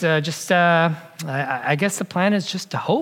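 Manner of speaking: put-on very uncertain, hesitant, doubtful voice. Quoting a man as he concludes about his plan, imitating a very uncertain voice. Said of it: "in a very uncertain voice".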